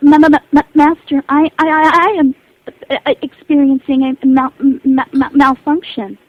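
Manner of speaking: very loud, slow, malfunctioning, stuttering robot voice. Showing the other speaker what listeners ask to hear: glitching malfunctioning robot voice. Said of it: "robots that are malfunctioning".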